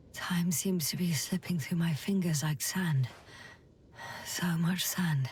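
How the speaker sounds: tired, low-pitched whisper. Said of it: "You sound tired".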